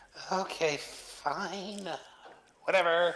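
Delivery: put-on heavy Valley Girl accent. Agreeing in character to go to the mysterious tower: heavy valley girl voice. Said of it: "I'm doing a little too much Valley Girl here".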